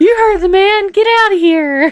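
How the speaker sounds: very high-pitched, loud squeak. Ending a bit on a spooky podcast episode, Mickey Mouse voice. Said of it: "And then you hear Mickey".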